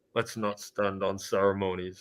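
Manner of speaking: hushed, slow, carefully studied delivery. Quoting what he says, the speaker acts out his line, imitating his voice. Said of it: "He's like".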